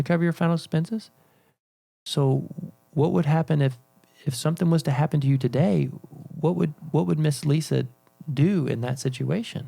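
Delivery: gentle concern with a hint of panic. Demonstrating how to ask a client, Mister Chris, the question, concerned and slightly worried. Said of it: "coming out of, of a concern and like a slight worry or panic, right? In my voice".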